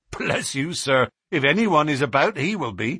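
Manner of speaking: ordinary delivery, nothing marked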